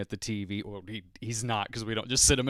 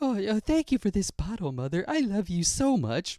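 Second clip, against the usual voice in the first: put-on very high, swooping, sing-song baby-talk voice; 9 semitones higher than usual. Imitating the voice a parent does for a baby, put-on sweet baby voice. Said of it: "her voice for him is more like".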